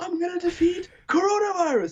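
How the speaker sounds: mock wailing preacher, very high, crying shout.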